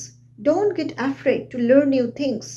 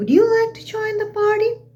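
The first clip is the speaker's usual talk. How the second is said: pitch climbing at the end up to party; 9 semitones higher than usual. Showing how a spoken question sounds, rising intonation. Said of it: "my voice is rising here".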